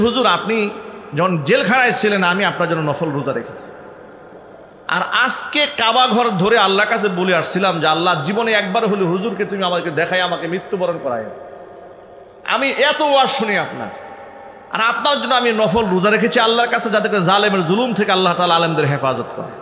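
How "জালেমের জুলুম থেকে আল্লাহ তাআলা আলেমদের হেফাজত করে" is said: ordinary talk, nothing marked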